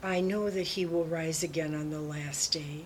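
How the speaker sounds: plain reading voice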